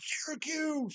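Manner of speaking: shrill, very high call-out. Retelling how a stranger yelled a shirt's name: imitating a stranger yelling. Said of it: "this dude just yells out".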